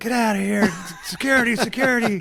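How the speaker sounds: put-on, high-pitched shouting by several voices at once. Retelling how players in a locker room yelled at the intruder: imitating players yelling. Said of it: "And they all kinda yelled".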